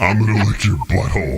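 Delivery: put-on villain voice. Doing a line from The Avengers after asking about Thanos: Thanos voice. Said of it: "Let's see if I can do it".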